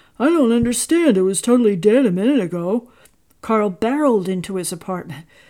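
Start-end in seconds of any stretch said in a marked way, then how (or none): 0.2-2.9 bewildered, baffled, raised exclamation. Reading a story, the store manager as a car engine sputters back; bewildered exclamation. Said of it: "the bewildered store manager exclaim".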